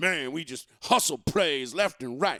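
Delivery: loud, put-on Southern accent. Imitating a Celtics fan bragging about the team: put-on Southern accent. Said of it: "all of a sudden Southern now".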